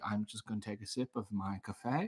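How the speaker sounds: very low, hushed put-on voice. A new character bit mispronouncing foods, Stanley Tucci voice. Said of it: "my new character is Stanley Tucci mispronouncing foods".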